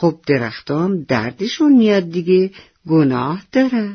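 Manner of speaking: ordinary delivery, nothing marked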